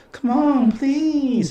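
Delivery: sweet, very high, cutesy, wheedling little voice. Imitating a girl trying to change the speaker's mind: cutesy pleading voice. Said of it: "women do this like cutesy voice".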